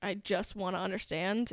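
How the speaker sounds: ordinary delivery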